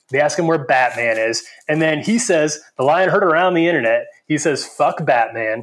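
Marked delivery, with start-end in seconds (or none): 4.6-5.6 put-on angry, edgy teenage kid voice. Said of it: "sounded like it was written by some angry kid".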